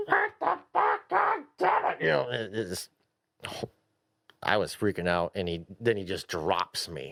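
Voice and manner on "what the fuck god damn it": mock screaming, much higher pitch, slower. Recounting being lifted by another player's helicopter in a game; imitating a scream. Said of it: "I'm screaming like".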